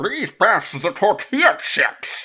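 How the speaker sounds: goofy, pathetic villain voice, high and loud. Describing a show's pathetic version of the villain, the speaker does a goofy Bane voice. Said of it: "that's like exactly what they do with Bane".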